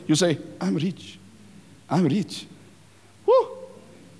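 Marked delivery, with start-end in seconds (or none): 0.6-2.5 speaking under breath, quieter. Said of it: "now it's under your breath".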